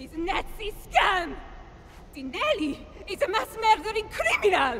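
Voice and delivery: furious, accusing shout.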